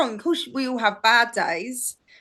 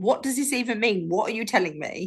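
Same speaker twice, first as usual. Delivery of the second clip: usual speaking voice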